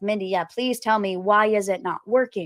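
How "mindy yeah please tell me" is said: ordinary delivery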